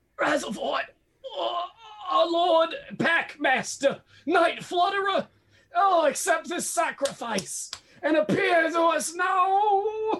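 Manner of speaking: very high, shrill dying cry, oh drawn out. A game master voicing the Werat leader as he dies: crying out in death throes. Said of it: "the Werat leader cries out".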